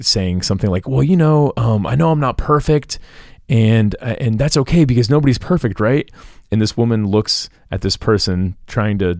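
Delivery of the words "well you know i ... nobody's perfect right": earnest, imploring pleading tone. Retelling what a wedding guest said to a member, imitating someone pleading.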